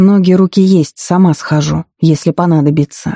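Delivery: ordinary delivery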